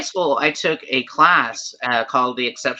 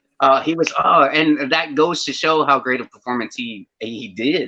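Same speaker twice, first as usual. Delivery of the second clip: ordinary delivery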